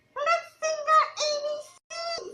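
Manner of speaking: put-on very high, quirky, high-energy kids' teacher voice. Showing how one had to talk to get their attention, funny high-energy voice. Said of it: "you had to be like using funny voices all the time".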